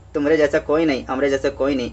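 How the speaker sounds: normal talking voice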